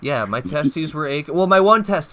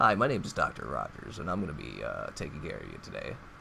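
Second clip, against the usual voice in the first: very low, very soft, rough gravelly murmur; 12 semitones lower, 14 dB quieter than usual. Retelling how a doctor introduced himself to the speaker: imitating Doctor Rogers. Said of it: "I think that's exactly how he sounded".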